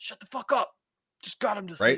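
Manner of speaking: mock, very high, furious angry yell. Imagining yelling at a cheering crowd outside: imitating someone yelling. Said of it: "I would have been yelling at them".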